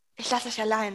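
whispering. Jelena speaks into Natascha's ear before leaving her with Loki; whispered in her ear. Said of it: "flüsterte Jelena in ihr Ohr".

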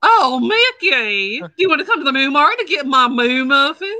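high, loud cartoon cow voice. Asked to do Clarabelle, speaking to Mickey: Clarabelle voice. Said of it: "do Clarabelle".

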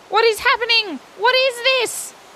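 very high, frightened, terrified cry. Narrating a story as a huge island rises from the sea, Oscar cries out terrified. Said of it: "Cried Oscar, terrified".

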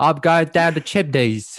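high, loud, put-on South London accent. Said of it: "Michael Caine".

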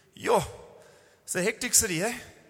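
put-on deadpan delivery. Retelling a woman's reply to a question, mock-deadpan. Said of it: "she was deadpan".

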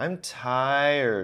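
long, drawn-out, dragged, stretched, tired voice. Imagining a small kid telling mommy they are tired: drawn-out 'tired'. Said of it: "When they drag out that tired".

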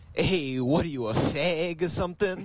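put-on Italian-American guy voice and accent. Imitating a substitute teacher meeting Matt: Italian-American guy impression. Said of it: "this is my impression if Matt".

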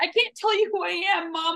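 put-on sobbing. Retelling a sad scene where a son speaks to his mom, mock crying. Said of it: "he's like crying and bawling".

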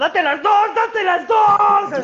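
play-acted, very high, shouted yell. Retelling what Macario shouted when he was asked: retelling a shout.

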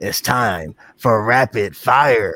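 loud, very slow, drawn-out announcer intro voice. Opening the rapid fire question segment: put-on segment intro voice. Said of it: "I always put on the voice".

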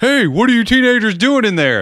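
very high-pitched, dopey security guard voice. Acting out a security guy in a slasher film: doofy security guy voice. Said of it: "the doofy security guy that's like".

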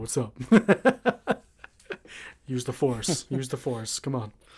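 put-on deep voice. Imagining how a character would sound if he talked, deep Grogu voice. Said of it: "have a deep voice".

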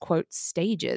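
ordinary talk

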